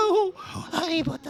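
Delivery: high squeaky creature voice. Asking the audience if they remember how the character talks, Dobby voice. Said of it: "vous vous rappelez comment parle Dobby un peu? ... C'est un peu comme ça".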